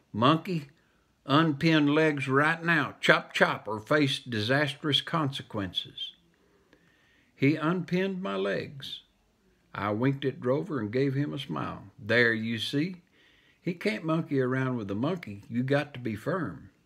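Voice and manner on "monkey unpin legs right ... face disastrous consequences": ordinary delivery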